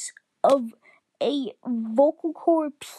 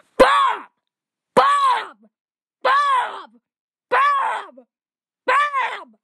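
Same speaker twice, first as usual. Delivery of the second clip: mock screaming, higher, louder, and slower; 10 semitones higher, 4 dB louder than usual. Retelling how people kept yelling a man's name, imitating someone screaming a name. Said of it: "They just go".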